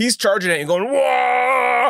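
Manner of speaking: charging battle shout. Voicing a charging orc in an arena fight: orc war yell. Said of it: "the yelling is incredible".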